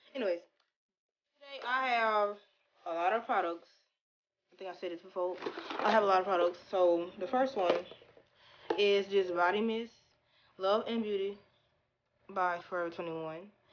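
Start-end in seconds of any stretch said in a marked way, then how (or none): 1.4-13.4 stiff-jawed speech, mouth barely moving, quieter. Introducing products to viewers while her jaw hurts, barely moving the mouth. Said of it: "My jaw hurts, so I have to talk like this".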